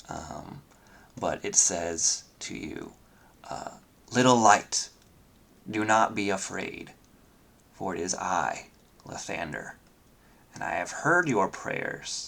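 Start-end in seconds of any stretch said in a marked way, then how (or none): 4.1-12.3 vast booming god voice, gentle and soothing underneath. A storyteller voices a being speaking to the listener: booming, comforting Lathander voice. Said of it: "it's booming, but it's still comforting at the same time".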